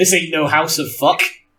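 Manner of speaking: put-on West Country accent. Redoing a character's line after a slip, in a West Country accent. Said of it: "In my in my best West Country".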